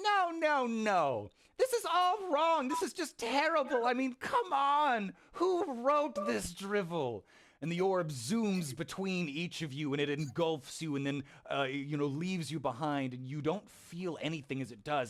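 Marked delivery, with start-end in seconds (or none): 0.0-7.2 tiny, small, very high squeaky voice. Narrating the scene to the players, voice a speaker in a small squeaky voice. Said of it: "a small squeaky voice go".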